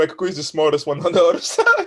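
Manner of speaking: words broken up by laughing. Agreeing about a character with the others, laughing while talking. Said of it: "why are you laughing when you say that".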